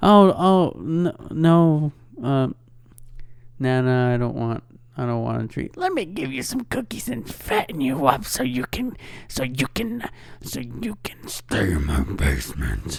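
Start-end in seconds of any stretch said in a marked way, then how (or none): 5.8-13.0 soft, swooping, terrifying put-on grandma voice. Imitating how a boss would talk as a nana, in a terrifying put-on nana voice. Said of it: "That was a terrifying voice".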